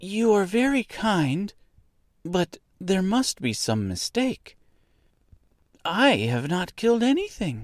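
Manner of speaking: halting, unsure speech. Dorothy answers the little woman who expects a reply: hesitant. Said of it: "with hesitation".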